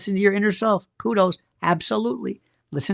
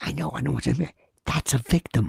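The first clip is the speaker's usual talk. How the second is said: imitated whispering at a lower pitch; 7 semitones lower, 3 dB quieter than usual. Retelling what Erica said about a grieving mother: imitating someone whispering. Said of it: "You're whispering".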